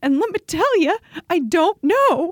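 almost in tears. Speaker talks about being off hormones for the first time since sixteen: almost in tears. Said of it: "I'm literally almost in tears right now".

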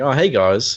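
put-on smug character voice. Recounting a scene of Clark outrunning a car, Clark's mock-smug greeting. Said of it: "he's really smugly leaning on the fence".

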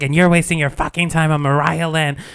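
worked-up, agitated ranting, screaming. Describing an album where she screams at him, retelling a scream. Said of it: "and screaming at him".

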